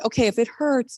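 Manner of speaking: normal talking voice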